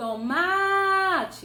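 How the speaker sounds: heavy stress on ma in tomate, drawn out. Portuguese stress lesson, calling a word like a person: heavier, longer stress on ma. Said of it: "o ma parece que está mais intenso, parece que ele pesou um pouco mais e demorou mais".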